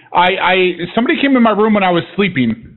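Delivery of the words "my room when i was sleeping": normal talking voice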